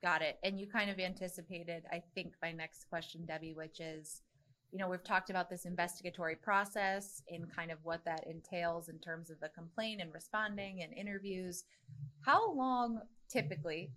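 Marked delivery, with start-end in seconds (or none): 13.3-13.9 heavy emphasis on the word "typically". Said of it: "emphasis on typically".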